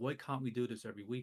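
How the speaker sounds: normal talking voice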